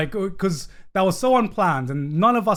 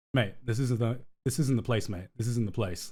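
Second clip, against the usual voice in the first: disappointed, let-down parental scolding tone; 4 semitones lower, 7 dB quieter than usual. Retelling telling an unwanted man to leave: imitating a disappointed parent. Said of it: "I go into disappointed parent mode".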